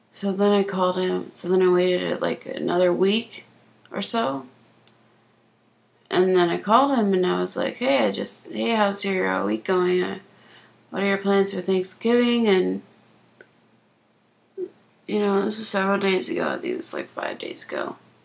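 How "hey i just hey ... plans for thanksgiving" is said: plain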